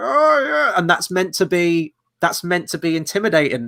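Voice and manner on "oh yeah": very high-pitched character voice. Reviewing a film and mocking the villain's voice: Bane voice. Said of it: "have a character talking like".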